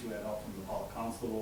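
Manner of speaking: normal talking voice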